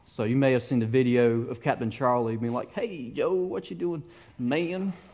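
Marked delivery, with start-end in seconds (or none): 2.7-4.9 put-on soft, light, pitched-up Southern grandpa voice. Quoting a video of Captain Charlie, a Jungle Cruise captain: Captain Charlie's Southern grandpa voice. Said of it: "sound like a Southern grandpa".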